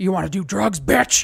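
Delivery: put-on horror movie killer voice. Describing how a horror killer talks, imitating Freddy Krueger. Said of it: "And he's like".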